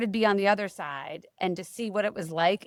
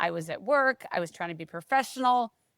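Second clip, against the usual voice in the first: ordinary delivery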